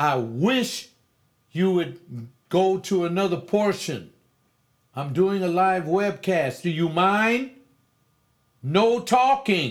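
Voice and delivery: loud, high angry outburst. During a live webcast, telling someone talking in the background to stop, raised voice. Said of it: "I've got to raise my voice".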